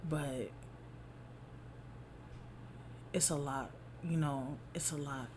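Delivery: fighting back tears. A mother talking to her audience about her situation, holding back tears. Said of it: "I'm trying not to cry".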